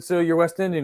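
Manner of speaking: plain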